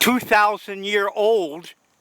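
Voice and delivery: put-on slow delivery, old heavily stressed.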